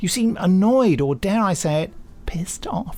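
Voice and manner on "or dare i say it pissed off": whispered, daring, conspiratorial aside. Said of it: "reading the listener's cheeky word".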